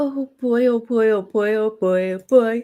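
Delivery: speaking while yawning. Near the end of a live stream, yawning while talking. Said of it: "Sorry, I'm yawning".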